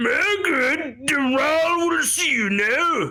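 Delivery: loud booming, echoing voice. Voicing an unseen figure greeting the entering party: loud booming voice. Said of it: "a loud, booming voice that echoes out".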